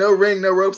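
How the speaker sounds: ordinary talk, nothing marked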